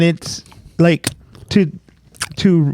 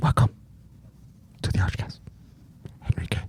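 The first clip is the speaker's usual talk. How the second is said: hushed whisper, quieter. Opening the show while whispering for ASMR: whispering. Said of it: "Why are we whispering?".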